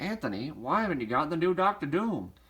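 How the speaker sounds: put-on old-fashioned newsreel announcer delivery. Voicing an imagined viewer's question to you, in an old-timey news reporter voice. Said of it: "old-timey uh, news reporter voice".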